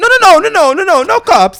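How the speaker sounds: shrill, very high, loud, frantic cartoonish panic. Retelling a man's reaction again, arms flailing: imitating a frantic man like a cartoon. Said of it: "flailing like an Italian cartoon".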